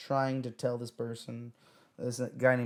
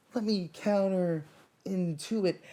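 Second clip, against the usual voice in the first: firm raised voice, high and slow; 7 semitones higher than usual. Retelling an argument with another guy: retelling own raised voice. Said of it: "I raised my voice".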